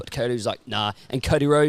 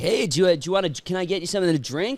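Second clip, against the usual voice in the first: pitched-up, put-on Californian-style accent; 6 semitones higher than usual. Retelling how a guy on the plane offered a drink, in a Californian accent. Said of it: "had like one of those Californian accents".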